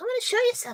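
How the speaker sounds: acted sugary, very high, sweet motherly voice. Retelling what mom said before gutting the chicken: imitating mom sweet and nice. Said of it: "sweet and nice and Julie Andrews".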